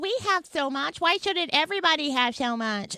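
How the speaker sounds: spoiled, petulant, whining voice. Mocking what petulant young people say, mock whiny young people. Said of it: "Those are like a whiny".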